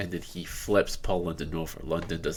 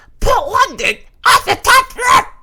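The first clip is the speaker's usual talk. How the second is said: squeaky, very high, loud, swooping, excited voice; 14 dB louder than usual. Mocking how an announcer sounds when trying to convey excitement, squeaky Josh Matthews impression. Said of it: "when he tries to convey excitement, he just goes like ... squeaky scrawny".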